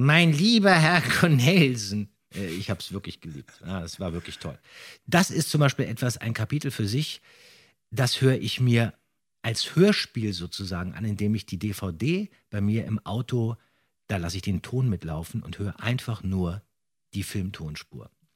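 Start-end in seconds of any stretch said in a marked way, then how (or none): 0.0-2.1 put-on high, loud, slow, drawn-out old-gentleman voice. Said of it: "Da hat er immer gesagt".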